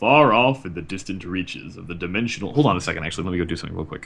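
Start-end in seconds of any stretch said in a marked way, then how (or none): 0.0-2.5 deep, low-voiced narrator voice. Starting a prologue intro: deep voice. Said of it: "Deep voice".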